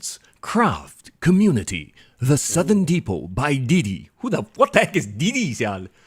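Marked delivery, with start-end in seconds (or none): 0.0-4.1 slow commercial announcer voiceover voice. Reading a festival website aloud: voiceover voice. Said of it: "you just gave your voiceover voice".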